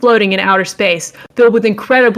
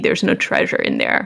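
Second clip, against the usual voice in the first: usual speaking voice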